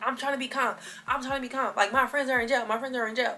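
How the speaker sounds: put-on upset, frantic speech. On the phone with mom on the way to the police station, retelling frantic protest. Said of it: "you need to calm down".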